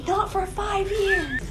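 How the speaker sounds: mock, very high, shrill shouted yell. Retelling a family conversation about a wedding: imitating mom yelling. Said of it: "My mom yells".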